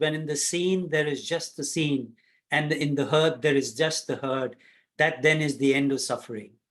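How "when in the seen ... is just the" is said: plain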